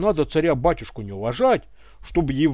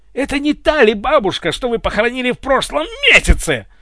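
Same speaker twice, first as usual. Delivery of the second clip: enraged, high, spluttering yell, spitting; 8 semitones higher, 5 dB louder than usual. A superior officer confronts a lieutenant over his lie, yelling and spraying spit. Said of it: "брызгая слюной, заорал Врубель".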